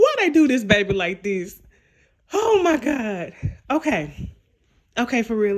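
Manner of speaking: talking through bursts of laughter, swooping pitch. Reacting to a plot twist in a show, laughing while talking. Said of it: "Let me stop laughing and be serious".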